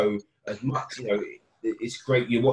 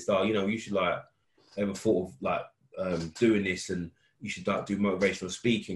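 plain

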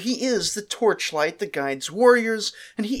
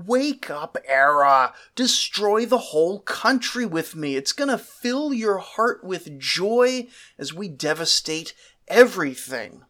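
ordinary talk, nothing marked

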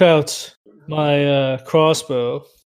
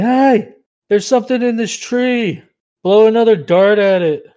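loud, high-pitched shout. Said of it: "I yell at the dude".

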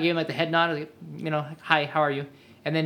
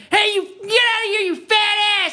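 loud, very high shouting; 7 dB louder than usual. Imagining meeting Scott Steiner, the speaker imitates him yelling insults. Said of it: "he just started yelling at me and calling me names".

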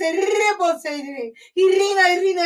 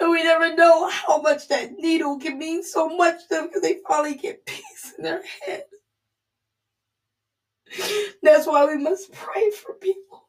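tearful, crying speech. Urging listeners to pray for people who are hurting, crying. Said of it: "I'm sorry for crying".

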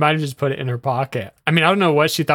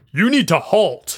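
mock commanding, authoritative voice; 4 semitones higher than usual. Retelling how their dad ordered a fleeing woman to stop, imitating dad's commanding voice. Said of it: "he has that commanding voice".

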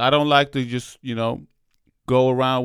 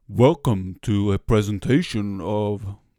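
put-on heavy, deep, slow old-man audiobook narrator voice; 4 semitones lower than usual. Imitating classic audiobook narrators: heavy old narrator voice. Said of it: "this old guy with a very heavy voice. It's like".

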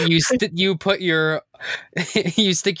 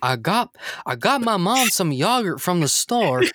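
mock Texas-accented cartoon father voice. Slipping into a voice he says sounds like Hank Hill; Hank Hill voice. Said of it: "Just keep doing the voice".

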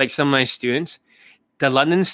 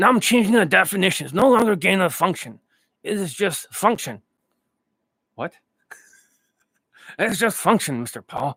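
put-on older man's voice, higher pitch; 4 semitones higher than usual. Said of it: "I'm Anthony Fauci".

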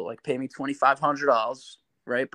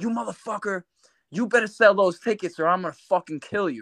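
mean, furious, angry menacing tone, pitched up; 6 semitones higher than usual. Retelling how the promoter cursed at him on the phone: imitating someone cursing angrily.

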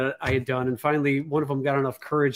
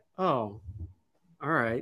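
soft, deflated, crestfallen, disappointed tone; 6 dB quieter than usual. Retelling a woman who mistook you for someone else: imitating her disappointment. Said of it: "she was like all disappointed".

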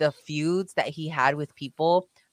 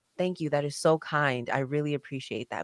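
quiet, soft voice, getting quieter; 4 dB quieter than usual. Retelling what a wrestler said after meeting him: imitating John Cena speaking quietly. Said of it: "he said it, like, so quietly".

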